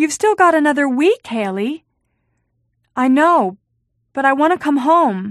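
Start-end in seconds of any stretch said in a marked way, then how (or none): 0.0-1.8 taken aback, mildly startled, surprised. She answers Haley's late-night call from the camp office, surprised. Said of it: "She sounded surprised".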